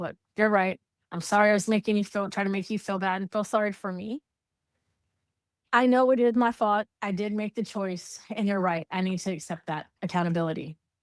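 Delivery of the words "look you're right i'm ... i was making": usual speaking voice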